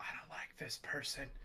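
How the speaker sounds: whispering. Whispering in character to another player's character: whispering. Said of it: "I just kinda whisper".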